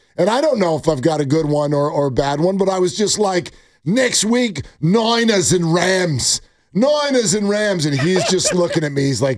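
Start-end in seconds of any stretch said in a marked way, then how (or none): 3.9-7.9 slow, drawn-out put-on Australian accent. Dad trying to make his son laugh, Australian accent. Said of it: "firing an Australian accent at him".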